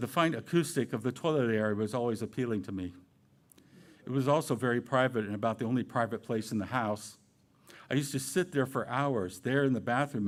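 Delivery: ordinary delivery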